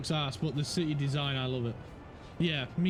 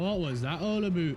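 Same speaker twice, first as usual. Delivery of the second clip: joking, put-on Canadian accent. Joking about going back to being Canadian, in a put-on Canadian accent. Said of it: "We're going back to being Canadian, man".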